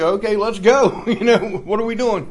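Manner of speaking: acted cheerful voice. Retelling going to the CVS for a drug test: acting all happy. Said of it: "I'm like all happy".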